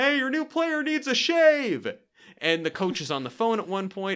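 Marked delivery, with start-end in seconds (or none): 0.0-1.9 very high, shouted heckling-style yell. Retelling a heckler's line yelled off screen in a movie: imitating someone yelling. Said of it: "someone yell off screen".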